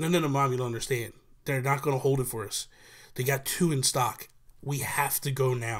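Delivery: ordinary talk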